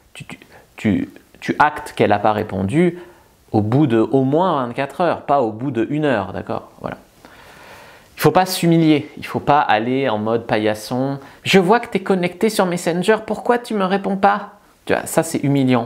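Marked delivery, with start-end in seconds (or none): 11.4-14.5 meek small voice, much higher. Speaker acts out a needy message to someone not replying, in a submissive guy's small voice. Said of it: "je fais la petite voix de".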